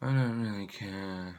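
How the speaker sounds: dry, bored, slow, droning monotone. Mocking own old videos: imitating own droning bored voice. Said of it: "talking in rather a drone, dry sort of voice".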